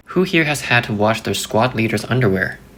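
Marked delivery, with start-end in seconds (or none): none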